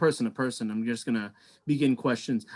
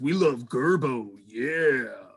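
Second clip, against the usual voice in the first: husky-voiced speaker. Storyteller voices one audience member yelling out, in a husky voice. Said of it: "And then one husky voice".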